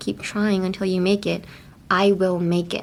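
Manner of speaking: ordinary delivery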